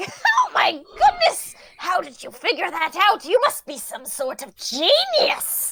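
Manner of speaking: high, swooping, sing-song squeal. The narrator voices Doris reacting to a player's action, in a squealing Doris voice. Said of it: "Doris kind of squeals and is like".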